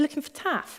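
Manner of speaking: put-on Zimbabwean accent. Quote the lady you heard in the pub, in a little lady's voice with a Zimbabwean accent. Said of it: "a little lady's voice, Zimbabwean accent".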